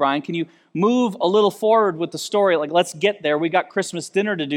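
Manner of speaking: ordinary talk, nothing marked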